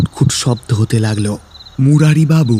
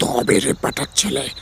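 suppressed, stifled, muffled growl; 7 dB quieter than usual. Reading a man's line as he emerges from his mosquito net, suppressed growl. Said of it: "চাপা গর্জন করে বললেন".

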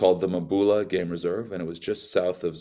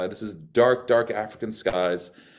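plain

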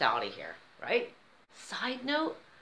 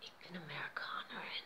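put-on quiet, whispered, flat German accent; 5 semitones lower, 14 dB quieter than usual. Speaker retells what she said quietly to a woman, in a quiet flat german accent. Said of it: "in my best flat German accent".

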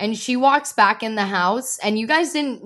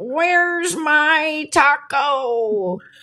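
put-on old man voice, pitched up high; 5 semitones higher than usual. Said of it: "I used to do my old man impression".

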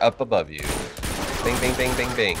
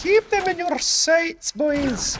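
put-on Scottish accent, higher. Quoting a game character's line, imitating a Scottish accent. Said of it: "like, a Scottish accent".

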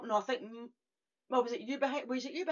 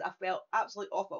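ordinary delivery

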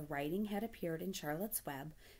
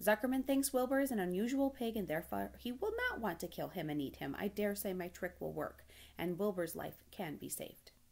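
ordinary delivery

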